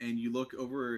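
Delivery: plain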